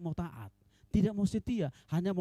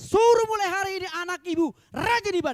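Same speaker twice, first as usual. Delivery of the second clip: high, loud, tearful, urgent voice. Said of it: "Saya bilang".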